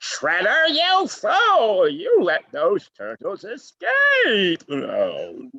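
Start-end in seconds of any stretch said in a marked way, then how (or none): 0.0-4.6 very high, loud cartoon shout, "fool" stretched out. Showing a favorite cartoon voice: Krang voice. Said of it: "such a cool voice".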